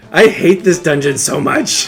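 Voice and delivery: genuinely furious, fed-up voice. Playing through a hated dungeon after running out of magic: really angry. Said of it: "I am really angry right now".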